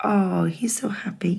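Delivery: plain reading voice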